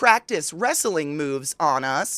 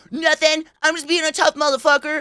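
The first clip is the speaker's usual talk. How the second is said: put-on very high, squeaky, unbroken teen boy voice; 10 semitones higher, 4 dB louder than usual. Retelling the brother's reply when mom asked what he was doing: Corey's high-pitched voice. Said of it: "he has this kind of high pitched voice like this".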